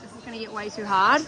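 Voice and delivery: ordinary talk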